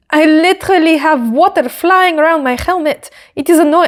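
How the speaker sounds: fake French accent, badly done. Quoting Isaac's helmet complaint to his engineer, in a bad French-accent Isaac impression. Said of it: "I can't do a French accent".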